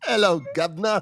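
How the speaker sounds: mock, fake British accent. Taking another turn at a British accent after others judge it: mock British accent.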